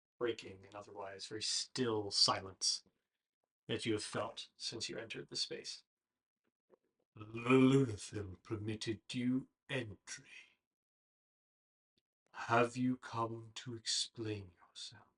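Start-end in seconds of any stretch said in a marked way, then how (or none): 7.2-15.0 deep, hollow, slow, echoing voice. Voicing a voice echoing in a player's mind: deep, hollow voice. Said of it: "a deep, hollow voice echoes in your mind".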